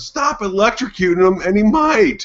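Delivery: mock shrieking, very high-pitched scream. Retelling watching the video at home: retelling own screaming. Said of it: "I'm sitting there screaming at the screen going".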